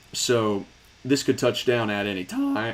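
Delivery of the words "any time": voice cracking and breaking. Commenting on a volatile tornado setup, voice cracking. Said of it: "Crazy voice crack".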